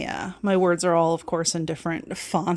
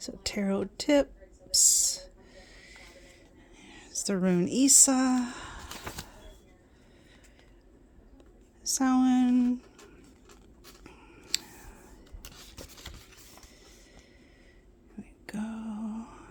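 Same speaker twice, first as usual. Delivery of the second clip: speaking softly, higher and quieter; 4 semitones higher, 6 dB quieter than usual. Flipping through pages and naming the subjects, talking really quietly. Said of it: "I am talking really quietly".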